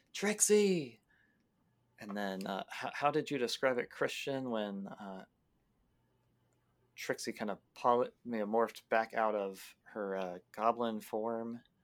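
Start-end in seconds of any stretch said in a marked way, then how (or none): 0.2-1.0 high, loud yelling. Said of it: "just yelling".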